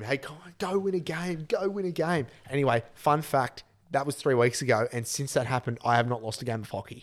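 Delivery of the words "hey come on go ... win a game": mock, high-pitched screaming. Retelling everyone screaming at a rival player: imitating people screaming. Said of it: "we're all just screaming at him".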